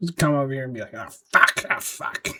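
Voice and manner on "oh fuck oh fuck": ugly, nasty put-on way of talking. Act out a guy who would come over here and talk, in a put-on nasty-ass voice. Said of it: "just talking to nasty ass voice".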